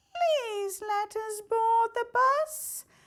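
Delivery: put-on very high, scared, frightened little child voice. In a comic bus scene, a child answers Le Saboteur; frightened child voice. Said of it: "Frightened child on board".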